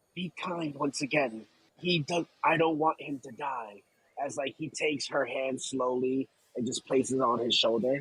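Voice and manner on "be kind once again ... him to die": whispering in a put-on voice. Playing a character kneeling by a dying man, speaking to his daughter: whispering in character. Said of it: "and he'll whisper".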